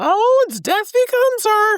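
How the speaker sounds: acted, very high, rising, blurted shout. Retelling what someone shouted during a movie trailer: imitating someone shouting. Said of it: "he just shouts out".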